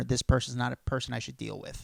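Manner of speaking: plain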